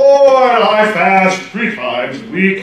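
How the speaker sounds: loud, theatrical, stagey put-on British accent. Reading a pious prayer aloud to a group, putting on a theatrical voice. Manner: put-on British accent. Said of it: "I immediately pretend I have a British accent".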